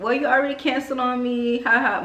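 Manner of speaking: mock laughing tease. Retelling own joking reply to the braider, laughing while teasing. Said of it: "But I'm literally laughing, like, I'm smiling".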